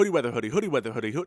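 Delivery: rapid, rushed, rattled-off delivery. Repeating a tongue twister five times fast. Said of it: "Say that five times fast".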